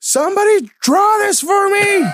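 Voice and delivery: acted, very high, drawn-out, top-of-the-lungs child yell. Retelling a son yelling from the back of the minivan: imitating a child yelling. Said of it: "Hugo's yelling at the top of his lungs".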